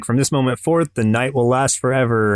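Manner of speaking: ordinary talk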